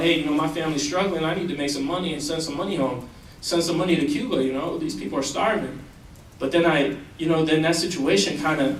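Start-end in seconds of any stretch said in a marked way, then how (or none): none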